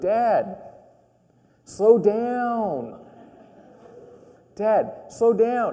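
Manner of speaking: put-on high, whiny childlike pleading, very slow, pitch drawn downward. Retelling a son's words on a car ride, imitating a child drawing out "down". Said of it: "he draws out the down word".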